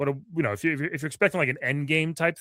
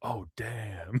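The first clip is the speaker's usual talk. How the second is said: put-on whisper, lower and quieter; 5 semitones lower, 8 dB quieter than usual. Retelling what a moviegoer behind them kept saying: imitating a whispered reaction. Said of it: "he was whispering it".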